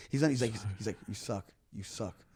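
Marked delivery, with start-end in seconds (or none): 1.1-2.1 creepy mutter under breath, lower and quieter. Retelling a front-row audience member heckling: imitating creepy muttering under breath. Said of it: "a creepy smile under his breath".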